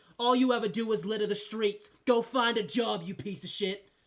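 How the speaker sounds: loud, scolding, berating tirade. Voicing a character who berates a player's drunk character: voicing a woman berating a drunk. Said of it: "she goes".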